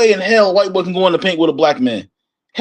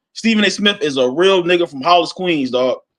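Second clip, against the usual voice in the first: ordinary delivery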